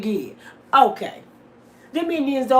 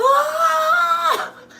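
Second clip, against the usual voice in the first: put-on shrieking witch voice, pitched higher. Acting out a robbed woman freaking out: shrieking like the Wiz witch. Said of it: "she gonna trip it out like the Wiz, the, the witch on the Wiz".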